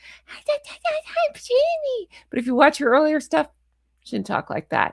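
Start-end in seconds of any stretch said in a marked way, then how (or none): 0.0-2.1 very high, squeaky cartoon-baby talk. Mocking how a woman talks, imitating a baby voice. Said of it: "the Jamie baby voice".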